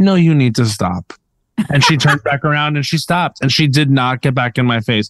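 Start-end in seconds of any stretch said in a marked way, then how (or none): 0.0-1.1 acted kindly but unbending tone, calm and even. Retelling an older woman's scolding, the speaker repeats her reply: retelling a calm reply. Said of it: "I said in a calm voice".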